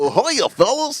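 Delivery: very high, dopey cartoon dog voice. A speaker showing off childhood Disney voices on request, doing a Goofy voice. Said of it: "Goofy, go".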